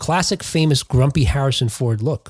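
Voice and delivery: ordinary talk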